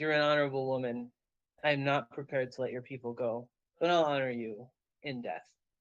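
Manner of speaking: dry, unnatural rasping voice like rubbing bones. Storyteller voices a figure answering a woman, voice like bones rubbing together. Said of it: "his voice sounds like like bones being rubbed together".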